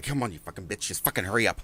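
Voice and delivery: crude, rude, impatient cursing. Retelling what the crazy guy said on mute during calls: imitating Mike Smith. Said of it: "he would pause right in the middle of her answer and be like".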